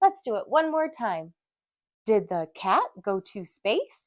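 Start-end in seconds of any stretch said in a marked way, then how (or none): 2.1-4.0 questioning rise at the end on space. Teaching kiddos question marks with a silly sentence: rising at the end. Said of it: "your voice goes up a little bit at the end".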